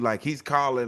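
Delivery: plain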